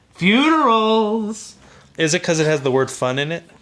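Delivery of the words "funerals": put-on bright, cheerful, upbeat, raised voice. Imitating the other speaker naming the topic: imitating a cheerful tone. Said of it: "Why'd you say that like it was happy?".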